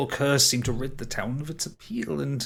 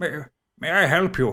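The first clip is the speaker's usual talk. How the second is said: put-on hunched, shuffling elderly gatekeeper voice; 2 semitones higher, 4 dB louder than usual. Voicing an old man shuffling up to the gate to greet travelers, old man character voice. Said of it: "he's shuffling up towards the gate".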